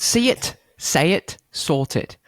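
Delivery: bad, rough put-on British accent drifting into Australian. After being told the accent's gotten rough, restarting it: bad british accent. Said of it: "Your accent's gotten a little rough".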